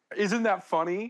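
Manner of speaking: mock keen, eager, prodding tone. Retelling how Olivia kept checking their reaction during a movie: imitating Olivia asking eagerly. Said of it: "looks over at me and goes".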